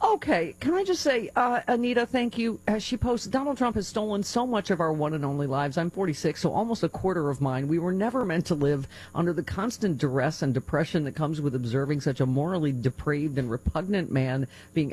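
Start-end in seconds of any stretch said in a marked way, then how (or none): none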